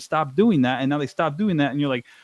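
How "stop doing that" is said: usual speaking voice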